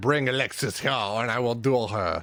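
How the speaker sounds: awful, terrible fake French accent. Retelling a character demanding a duel in the headmaster's office, in a terrible french accent. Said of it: "obviously in a terrible French accent".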